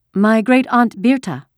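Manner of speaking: steady, firm voice. Narrator voicing a girl lying to an officer, in a firm voice. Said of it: "she lied in a firm voice".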